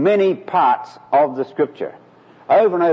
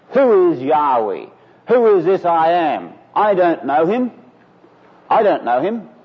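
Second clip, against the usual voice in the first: mock contemptuous sneer, stress on "I"; 3 semitones higher than usual. Speaker retells Pharaoh's reply to the message of the Lord, acting out a sneer. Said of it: "And this one sneers".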